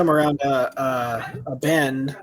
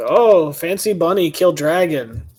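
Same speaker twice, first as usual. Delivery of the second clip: loud, very slow, lumbering giant voice; 4 semitones higher, 6 dB louder than usual. Voicing another giant reacting to the dragon tooth necklace: giant's voice. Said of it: "looks at you and goes".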